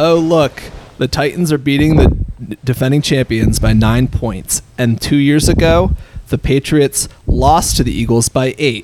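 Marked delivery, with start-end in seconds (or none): none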